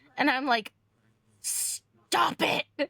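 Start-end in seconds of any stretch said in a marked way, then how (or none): 1.4-2.9 irritated, fed-up, rough, annoyed snapping outburst. Retelling being kept awake by a roommate, imitating own angry outburst. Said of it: "I roll over and I glare up at A".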